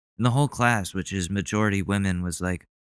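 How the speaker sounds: ordinary delivery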